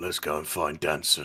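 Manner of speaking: low, gruff, rough-edged voice. Narrating a familiar character speaking in the silence, in a gruff voice. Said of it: "you will now hear the familiar gruff voice that says".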